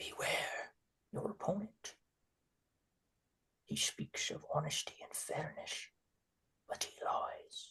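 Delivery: faint, hushed, barely audible whisper. Voicing Wintagon's warning that a player barely hears, in a barely audible whisper. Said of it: "a whisper, barely, barely even audible".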